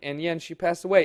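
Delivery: ordinary talk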